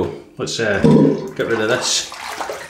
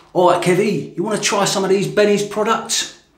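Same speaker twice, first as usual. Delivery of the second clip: put-on London accent, pitched very high; 9 semitones higher than usual. Offering someone products to try, put-on london accent. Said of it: "That was my London accent".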